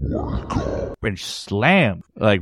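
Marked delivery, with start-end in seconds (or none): 0.0-1.0 sinister, very low, deep evil voice. Retelling a dream where a shadowy figure hit the nightstand, imitating a very low, evil voice. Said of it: "with a very low, evil tone".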